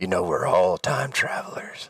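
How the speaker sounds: put-on laid-back drawl. Joking with friends, doing a Matthew McConaughey impression. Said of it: "that's my Matthew McCona-, McConaughey impression".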